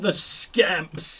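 aggressive, hostile outburst. A player spotting enemies hiding behind a wall says it aggressively. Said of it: "I said that very aggressively".

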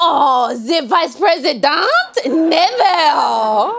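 put-on French accent. Answering a searcher as if a bystander: Kamala Harris doing a French accent. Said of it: "you sound an awful lot like Vice President Harris doing a French accent".

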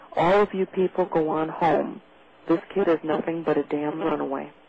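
ordinary delivery

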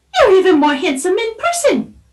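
squeaky, squeaking metallic voice. After her scanner recognizes the prince, she speaks up to him, squeaky metallic voice. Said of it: "her metallic voice squeaking".

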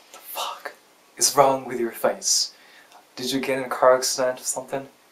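usual speaking voice

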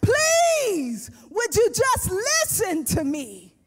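acted crying, yelling, pleading. Retelling a prophet's plea to people who will not listen: imitating Jeremiah weeping and shouting a plea. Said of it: "He's weeping, he's crying, he's shouting, he's screaming".

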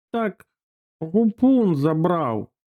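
feeble, weak, high-pitched voice. In a story, the grandmother answers the angry mother: weakly. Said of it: "слабко почала баба".

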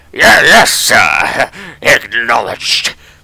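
put-on orc soldier character voice. Narrator voicing an orc's reply in the story, orc character voice. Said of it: "What was his voice again?".

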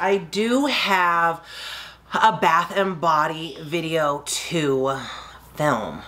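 very slow, every word stretched and drawn out. Wrapping up after a story about skipping a trip, very slow. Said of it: "Why did I say that so slow?".

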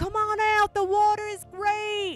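put-on Australian accent. Retelling a voice calling from far away at the island, in an Australian accent. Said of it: "in an Australian accent that said".

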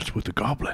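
voice dropped low, kept hushed. A game master voices a character asking a new arrival about the goblin, lowered voice. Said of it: "And he lowers his voice".

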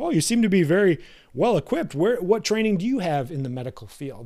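put-on snide, smug, patronising, condescending tone. Retelling what the speaker says back to a carpenter, acting mock-condescending. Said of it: "you kind of say it like a prick".

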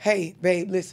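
in a whisper. Showing how a man can set a boundary with his partner, say it in a whisper. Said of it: "You can articulate this in a whisper".

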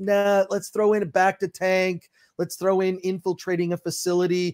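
ordinary delivery

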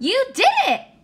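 very high-pitched, loud exclaiming. Narrator reading an owl's line as the animals celebrate, exclaimed. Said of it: "Exclaimed Owl".

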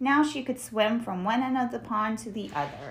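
ordinary delivery, nothing marked

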